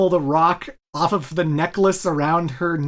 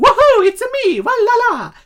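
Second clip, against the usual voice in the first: very high, loud, slow, swooping sing-song cartoon game-character squeal; 8 dB louder than usual. Contrasting the movie's Mario with the later Mario voice. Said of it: "We don't have that Mario".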